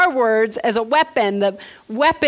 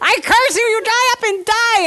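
high-pitched, screaming yell; 10 semitones higher, 3 dB louder than usual. Retelling cursing at the ants in the house, reenacting yelling curses. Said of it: "I'm like yelling and screaming at these ants".

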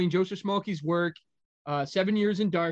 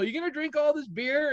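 pitched-up, calling-out yell; 9 semitones higher than usual. Retelling calling out to Will while packing up: retelling own yell. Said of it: "I yelled to Will".

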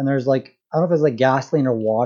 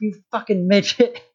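put-on furious, high, angry yell; 7 semitones higher than usual. Retelling a movie scene where a character yells: imitating someone yelling. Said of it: "yelling at him".

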